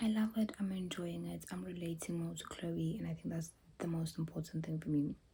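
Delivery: soft, hushed, quiet whisper.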